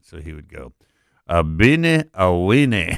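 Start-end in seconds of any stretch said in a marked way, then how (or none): 1.3-3.0 loud, very slow, drawn-out put-on French accent. Retelling how a chef said a canned food name: Jose Gutierrez French accent. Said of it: "the way you say Beanie Weenies in a French accent".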